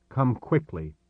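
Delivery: plain reading voice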